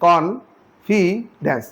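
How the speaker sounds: confidence slowed right down, syllable by syllable.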